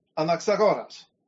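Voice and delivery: Dimitri in modern Greek pronunciation. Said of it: "who is going to give the way it would be said in modern Greek pronunciation".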